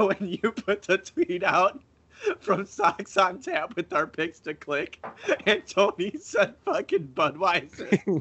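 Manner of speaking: talking through stifled laughter, high and swooping. Recalling someone's reaction to a posted tweet: holding back laughter. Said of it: "I'm trying not to laugh as I talk".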